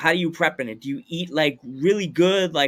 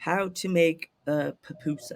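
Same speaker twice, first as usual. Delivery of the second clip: slow, drawn-out, put-on British accent; 6 dB quieter than usual. Imitating European viewers of the video, in a British accent. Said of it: "The British voice".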